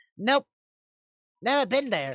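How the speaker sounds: put-on high-pitched old crone voice. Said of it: "This old crone of a lady".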